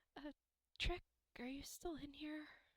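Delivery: very quiet call. Voicing a character calling out to Trick: a bit louder but still very quiet. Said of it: "a bit louder, but still very quiet".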